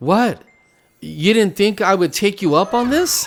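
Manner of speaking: stern reproving voice. Retelling Jesus answering a man who asked him to fix his marriage, mock-stern Jesus voice. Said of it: "Jesus tells him in a stern voice".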